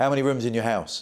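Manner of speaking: rough, gruff tone. Recounting a call answered by someone at the other end, imitating a gruff voice. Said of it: "a really gruff voice at the other end going".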